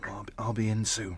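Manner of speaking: speaking in a whisper. Answering a caller who demands he get to work: whispering. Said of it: "Why are you whispering?".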